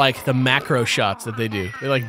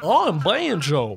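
put-on Texas accent, much higher; 4 semitones higher than usual. Talking about Diddy Kong Racing, doing Banjo's Texas accent. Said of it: "Banjo has a Texas accent".

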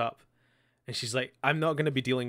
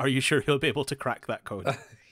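mock-sarcastic, put-on sarcastic tone; 3 dB louder than usual. Quoting a remembered line to a friend, retelling a sarcastic line. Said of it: "Is the sarcasm that".

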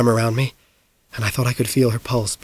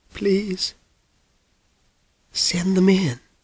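put-on soft, shaky, trembling elderly woman's voice; 7 semitones higher, 6 dB quieter than usual. An old woman inside the room invites her callers in, shaky old woman voice. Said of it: "said the shaky voice of an old woman".

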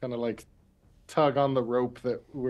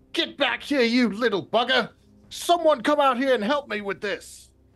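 shrill, very high, loud calling-out yell; 12 semitones higher, 6 dB louder than usual. Acting out a call into the camp for help: shouting in character. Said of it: "I'm gonna shout into the camp".

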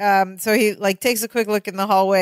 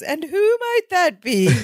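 very high-pitched, put-on English accent; 9 semitones higher than usual. Retelling a scene, a character speaking through a door, english accent. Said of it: "It's like an English accent".

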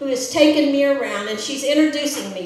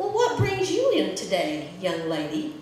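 put-on warm, kindly voice, low and warm; 4 semitones lower, 4 dB quieter than usual. Retelling how a man greeted her after sitting down across from her: imitating his warm tone. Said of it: "he warmly says to me".

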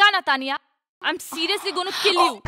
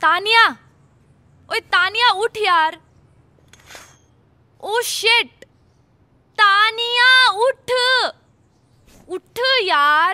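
bellowing, throat-tearing shout at the top of the lungs; 3 semitones higher, 4 dB louder than usual. Character waking Taniya in the morning, shouting at the top of her lungs. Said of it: "ये सुबह सुबह क्यों चिल्ला रही गले फाड़ फाड़ के?".

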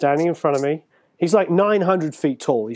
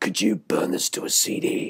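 breathy, whispery, slow; 3 semitones higher, 5 dB quieter than usual. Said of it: "he's got that voice like this".

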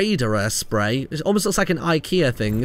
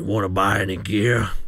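rough voice roughened deep in the throat; 9 semitones lower than usual. Opening loot boxes, reading a Reaper spray's text aloud; McCree voice, rough throat. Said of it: "I sound like McCree with a rough throat".

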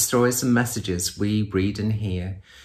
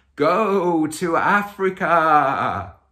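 loud, spooky, mysterious voice, pitched up; 7 semitones higher than usual. Retelling how a man woke teenagers outside their tent: imitating a loud mysterious voice. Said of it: "in a loud and mysterious voice".

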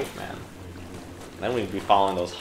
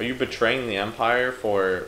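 plain

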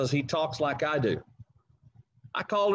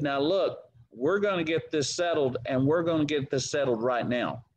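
ordinary talk

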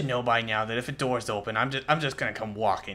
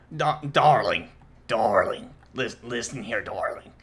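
put-on 70-year-old chain-smoker voice; 4 dB louder than usual. Answering someone who asks why they sound like that: 70-year-old chain smoker voice. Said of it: "Why do you sound like a 70-year-old chain smoker?".

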